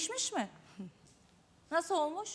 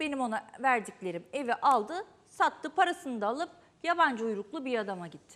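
usual speaking voice

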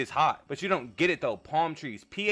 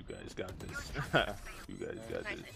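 drowsy, breathy, whispered, put-on half-asleep voice; 11 dB quieter than usual. The speaker announces and does their put-on sleepy voice for the group. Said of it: "I'm gonna do my sleepy voice".

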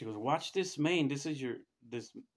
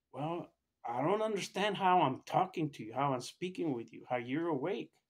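all worked-up, excited, freaked-out astonishment; 3 semitones higher than usual. Retelling what an alarmed doctor said after a scan: imitating a freaked-out doctor. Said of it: "he's freaking out".

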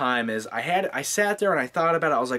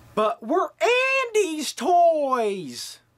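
toys stretched out, very high pitch, very slow; 13 semitones higher than usual. Reviewing Toy Story, doing a quick line in a Tom Hanks impression. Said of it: "that was my Tom Hanks impression".

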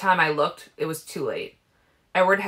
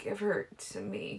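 very faint, cracked, croaky broken whisper; 4 semitones higher, 13 dB quieter than usual. Narrator reading a woman's line as she weakly lifts her hands; croaky broken whisper. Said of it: "she croaked in a broken whisper".

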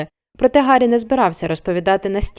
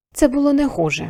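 quiet, soft, much higher pitch; 4 semitones higher than usual. A professor, finally relaxing, speaks to the boy with her, quietly. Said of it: "тихо промовила вона".

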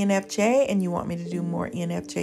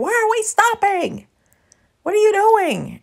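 very high, shrill, swooping yell; 12 semitones higher, 7 dB louder than usual. Retelling how her mom yelled at her on a street: imitating mom yelling. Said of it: "she was yelling at me like".

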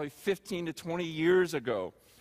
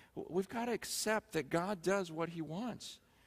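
ordinary delivery

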